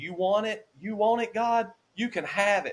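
furious, high-pitched, all-out angry yell. Retelling the moment of praying in pain: retelling an angry yell. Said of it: "I just yelled as loud as I could yell".

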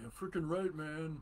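mock stoned-sounding voice. Describing a sound the listeners may not hear, mimicking a stoner voice. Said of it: "it sounds like a stoner going".

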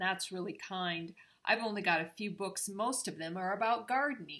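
ordinary delivery

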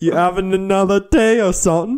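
put-on, very high-pitched bad British accent. Voicing a character calling out to Q, in a bad British accent. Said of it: "Maybe I'm trying to do a bad British accent".

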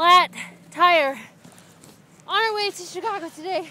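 winded, out of breath, puffing between words. News team member reports a flat tire after jacking up the car, out of breath. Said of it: "I'm out of breath because I've been jacking".

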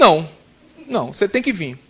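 ordinary talk, nothing marked

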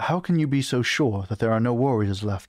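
usual speaking voice

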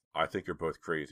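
ordinary delivery, nothing marked

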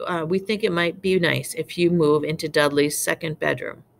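ordinary delivery, nothing marked

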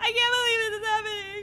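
fast, panicked sobbing, crying. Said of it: "Stop crying".

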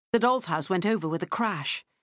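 ordinary delivery

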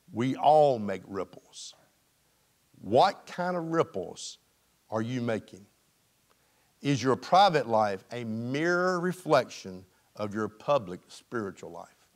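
very low, slow, deep, measured, deliberate reading voice. Reading a passage aloud so the audience lets it sink in, reading slowly. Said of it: "I'm reading this slow".

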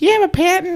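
put-on Chicago accent at a high pitch. Imitating a Shark Tank judge's catchphrase: Lori Greiner Chicago accent. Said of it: "She's got that Chicago accent".

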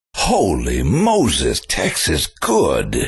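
very slow, drawn-out delivery with swooping pitch swings. Praising a demo tape while posing as Charlton Heston: Charlton Heston impression. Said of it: "this is Charlton Heston".

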